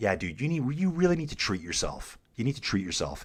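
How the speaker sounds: put-on, as sarcastic as possible, swooping sing-song. Retelling what he tells friends who don't work out: imitating himself being sarcastic. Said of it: "as sarcastically as possible".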